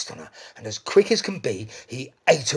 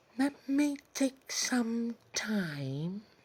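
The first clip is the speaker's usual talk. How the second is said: very high, slow, drawn-out meowing voice; 10 semitones higher, 8 dB quieter than usual. Narrator reading a story, Mister Cat answering Missus Pigeon, Mister Cat meowing a reply. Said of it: "[name] taunted, / Oh, [name] stroked his whiskers with one paw and pointed towards the sky and meowed, / [name] licked his lips and he purred".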